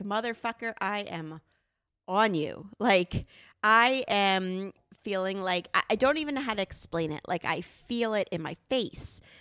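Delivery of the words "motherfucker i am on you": ordinary delivery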